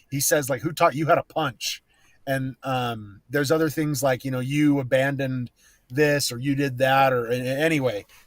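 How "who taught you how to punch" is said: put-on sarcastic delivery. Recounting a scene where she hits him, the speaker quotes his line, mock-sarcastic tone. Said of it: "he says it in a very sarcastic tone".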